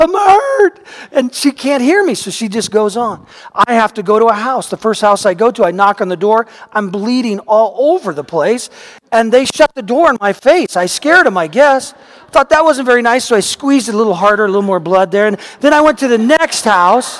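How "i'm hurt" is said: high-pitched yell. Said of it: "And I yell".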